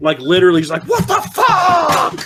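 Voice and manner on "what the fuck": mock very high frustrated screech, "fuck" drawn out. Retelling screaming at the tv at two in the morning: imitating own screaming. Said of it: "I'm screaming at my T V".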